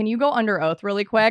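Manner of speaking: ordinary delivery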